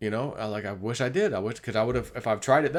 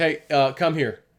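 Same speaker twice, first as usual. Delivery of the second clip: just a touch of a raised voice; 4 semitones higher, 6 dB louder than usual. Recounting calling someone over; retelling a slightly raised voice. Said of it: "that initial little bit of raising my voice".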